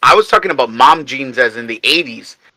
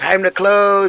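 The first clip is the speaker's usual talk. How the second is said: high-pitched, loud shouting; 7 semitones higher than usual. Retelling how bar staff ended every night: imitating someone screaming into a mic. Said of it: "scream into the microphone for the P A".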